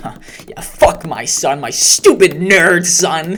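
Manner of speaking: booming, very loud, very slow, drawn-out dad voice. Mocking a father who tweets insults about his son: imitating the dad. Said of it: "writing this out and being like".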